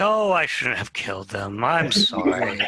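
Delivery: put-on villain voice, lamenting. Imitating the villain Nimrod regretting a killing: mock lamenting as Nimrod.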